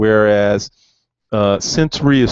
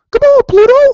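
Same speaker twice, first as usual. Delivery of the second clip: squeaked out high and loud; 9 dB louder than usual. Demonstrating voice acting by talking like Mickey Mouse, in a Mickey Mouse voice. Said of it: "someone can talk like Mickey Mouse".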